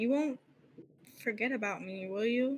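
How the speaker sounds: voice breaking and cracking. A game master voices her speaking to Azriel, voice cracking. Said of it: "You can kind of hear her voice crack".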